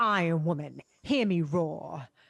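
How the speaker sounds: slow, drawn-out, put-on British accent. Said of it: "this is Emma Stone doing a British accent".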